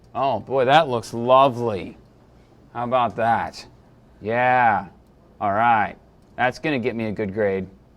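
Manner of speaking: deadpan, low, sarcastic voice with fake enthusiasm. Teaching image resolution, after enlarging a small layer: sarcastic. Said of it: "I'm being sarcastic".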